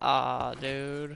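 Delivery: mock crestfallen, deflated, disappointed "aw" groan. Retelling own reaction after dying in the game: imitating own utter disappointment. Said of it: "Did you hear the utter disappointment I had?".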